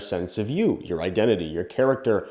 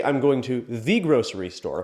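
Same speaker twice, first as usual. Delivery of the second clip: heavy emphasis on the word "the"; 3 semitones higher than usual. Showing how stressing one word changes a sentence's meaning: stress on the. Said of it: "By underscoring or intoning the word the".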